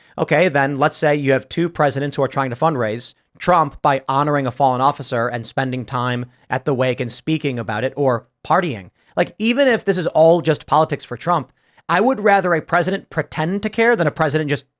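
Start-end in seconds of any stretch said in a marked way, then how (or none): none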